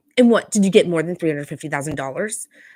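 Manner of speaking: play-acted snide, biting, really snarky tone. Retelling what Kyle said in a conversation: snarky Kyle impression. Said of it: "really snarky, is like".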